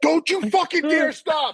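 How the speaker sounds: shrill, very high screaming. Retelling what others yelled at a roadblock: imitating people screaming. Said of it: "And they're all scream-".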